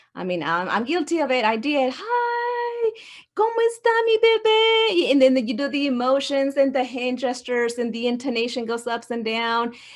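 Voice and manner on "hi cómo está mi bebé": put-on very high, very slow baby talk, "hi" stretched out. A parent recalling how they talked to their baby twins, in baby talk. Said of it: "I would s- use some of that baby talk".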